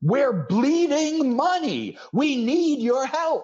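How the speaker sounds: very high, slow, drawn-out shout. Retelling a man standing up behind his desk to shout out, retelling a shout. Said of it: "literally stands up behind his desk and shouts out".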